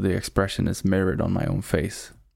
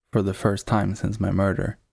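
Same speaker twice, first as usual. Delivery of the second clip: usual speaking voice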